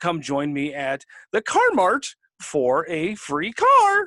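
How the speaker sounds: pitch riding up and down across the line, sing-song. Mocking people whose pitch goes up and down, imitating their roller-coaster intonation. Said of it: "roller coaster where they're like".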